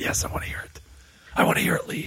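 hushed whisper. Speaker answering Lee in front of listeners, whispering. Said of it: "This is why I'm whispering".

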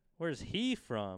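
enthusiastic, punchy delivery with a bang. Showing how to ask the guessing game's question, said with a bang. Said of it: "We got to say it with a bang".

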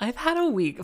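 emphatic stress on week.

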